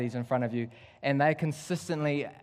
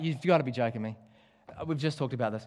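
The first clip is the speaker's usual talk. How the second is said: ordinary delivery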